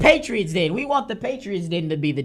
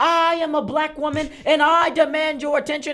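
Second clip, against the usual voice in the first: high, raised yell into a microphone; 8 semitones higher than usual. Retelling a speaker at a meeting, imitating someone yelling. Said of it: "she starts yelling into the mic".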